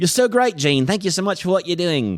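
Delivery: put-on British accent. Retelling how a tour guide thanked a friend: imitating a British accent. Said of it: "she's British".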